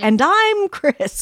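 news anchor delivery. Speaker demonstrates how saying the nightly news would sound: nightly news anchor voice. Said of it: "like saying the nightly news".

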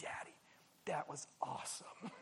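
very quiet, soft, slow near-whisper. Retelling what the daughter said after the ride: imitating daughter speaking softly. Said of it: "she looked at me very softly and she said".

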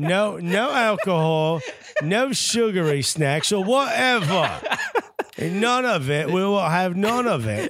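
terrible put-on English accent, very slow and drawn out. Reading out a team's hotel rules in a terrible english accent. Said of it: "I have a terrible English accent".

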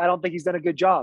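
normal talking voice

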